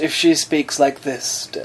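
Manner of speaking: slow, posh drawl.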